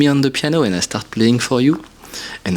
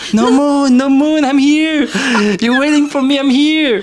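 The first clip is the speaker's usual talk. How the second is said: scream from far away, much higher, slower; 14 semitones higher, 5 dB louder than usual. Retelling calling out to a date leaving school 100 meters away, screaming across distance. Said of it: "I was screaming".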